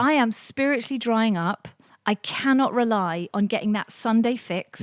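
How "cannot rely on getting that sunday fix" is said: ordinary talk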